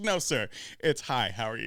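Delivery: flat, very low deadpan delivery. Retelling a stoned man's reply to someone, imitating a deadpan delivery. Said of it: "he just deadpans him".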